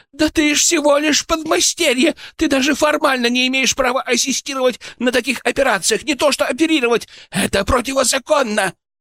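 very high, cracking, squealing outburst. Krylov objects to the narrator, voice breaking into a squeal. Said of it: "Его голос сорвался на визг".

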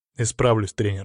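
ordinary talk

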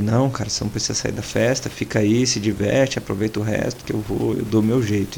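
ordinary talk, nothing marked

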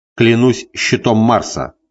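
ordinary delivery

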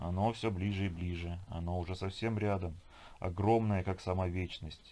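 ordinary delivery

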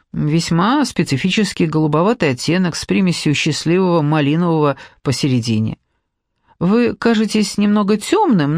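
ordinary delivery

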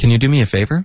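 casual everyday speed, words run together. Showing the quickest everyday way to say a phrase, fast everyday speaking speed. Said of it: "这是一个正常的语速，最快的。".

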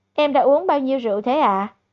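ordinary delivery, nothing marked

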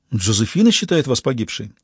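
plain

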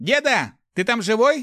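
very high, loud, cackling, laughing holler. A young man calls to the old man who fell into the pit, shouting while laughing. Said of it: "хохоча крикнул Руди".

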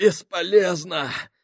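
gasping for breath, out of breath, panting. As Minhaus shouts to keep pulling, Sacks answers gasping for breath. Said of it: "сказал Сакс, задыхаясь".

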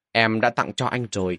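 usual speaking voice

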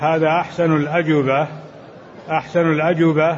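ordinary delivery

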